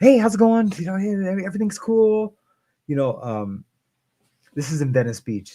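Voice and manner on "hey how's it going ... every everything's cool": mock very high, bouncing-off-the-walls hyper chatter. Retelling arriving at therapy, imitating own past hyper self. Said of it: "bouncing off the walls".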